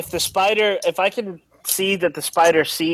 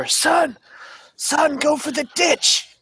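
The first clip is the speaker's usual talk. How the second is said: harsh, rough whisper, much higher; 10 semitones higher than usual. Gus belly-crawls over to Aiden and tells him, in a harsh whisper. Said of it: "just like in kind of a harsh whisper".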